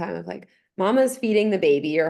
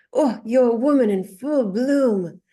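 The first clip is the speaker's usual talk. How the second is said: bad, butchered put-on French accent, pitched up; 5 semitones higher, 4 dB louder than usual. Retelling what a French guy said to her while pregnant, butchered French accent. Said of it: "he says this French accent. I'm gonna butcher it".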